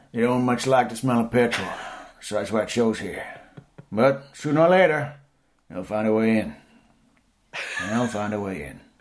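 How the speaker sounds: put-on rough, gruff, grizzled growling voice. Quoting a grizzled figure's warning: gruff put-on voice. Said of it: "he'd be all grizzled and he'd be like".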